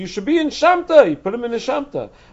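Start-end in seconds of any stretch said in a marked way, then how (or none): 0.0-1.1 all-out, very loud, shrill, yelled scream. Retelling a story, voicing a man screaming at someone eating his figs: retelling a scream. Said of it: "Reish Lakish screamed".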